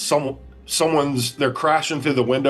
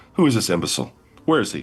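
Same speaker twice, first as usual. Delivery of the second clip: put-on calm villain voice, pitched lower; 6 semitones lower than usual. Retelling a film scene, quoting the villain Zod: imitating Zod speaking calmly. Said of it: "Zod calmly says".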